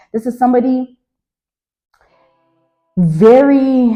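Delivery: voice breaking a little, with drawn-out "very". Speaking to the listener about a person who held power over them, voice cracking. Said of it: "my voice cracked a little bit".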